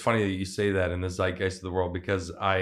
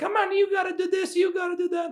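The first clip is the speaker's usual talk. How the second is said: very high-pitched grandmother character voice. Recalling a stage bit with bossy relatives: Nonna Maria character voice. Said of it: "you remember the Nonna Maria one?".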